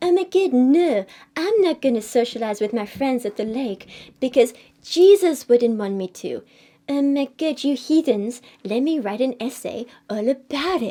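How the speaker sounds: dumb, goofy put-on stupid voice. Mocking a teenage boy from a video, in a go-to stupid voice. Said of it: "my go-to stupid voice".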